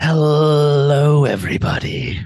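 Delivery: creepy, eerie, high-pitched, drawn-out, unsettling delivery. Podcast co-host, asked by the host to greet everybody, answers in a creepy voice. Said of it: "could you have not sounded any more creepy".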